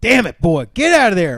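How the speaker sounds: booming, very loud, scolding holler. Retelling what dad would shout at a child: imitating dad yelling. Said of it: "my dad would go out there and go".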